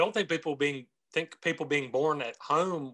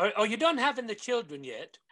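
horrible put-on British accent; 8 semitones higher than usual. Narrating the husband wandering back in, in a bad British accent. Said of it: "but for bad British accents".

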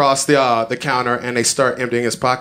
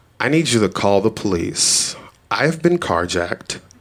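very calm delivery; 4 semitones lower than usual. Speaker recounting what they told a store cashier after being carjacked, retelling speaking very calmly. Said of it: "I look her directly in the face and I say very calmly".

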